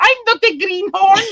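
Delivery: very high, exaggerated caricature Eastern European accent. Imitating a caricature immigrant arriving at Ellis Island: caricature Eastern European accent. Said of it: "the caricature of, like, an Eastern European".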